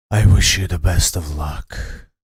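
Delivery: deep, booming chorus of many voices. Game master voicing a second creature replying before combat: voice of many voices. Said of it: "composed of many different voices".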